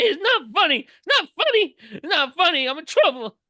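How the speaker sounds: put-on, very high, loud, sobbing kid's wail. Retelling a kid in band who pushed another kid away, imitating a crying kid. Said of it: "he's bawling, crying".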